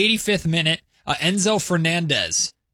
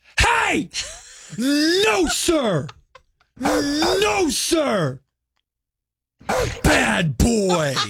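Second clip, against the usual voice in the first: very high, very slow, acted scolding yell; 11 semitones higher than usual. Imitating someone yelling at a barking dog on the puppy cam: imitating Kayla Anderson yelling. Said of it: "my impression of Kayla Anderson".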